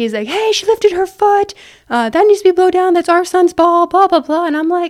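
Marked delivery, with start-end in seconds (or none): 0.3-4.5 frantic, high, loud screaming rant. Retelling what an angry dad shouted at the ref: imitating a dad screaming. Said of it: "screaming at me".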